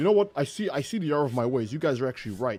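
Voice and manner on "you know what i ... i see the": usual speaking voice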